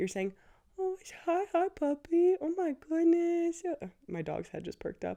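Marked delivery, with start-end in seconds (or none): 0.8-3.6 very high, slow voice as if talking to a puppy. Explaining how everyone greets a dog, then demonstrating it: talking-to-a-dog voice. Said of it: "like that dog voice is coming out".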